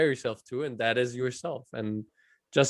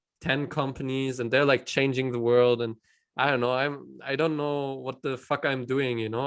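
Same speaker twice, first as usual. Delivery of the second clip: usual speaking voice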